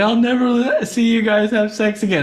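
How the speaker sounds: very high, shrill, full-on yelling. Retelling yelling at their parents in a bathroom, retelling a yell. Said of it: "I'm like yelling this".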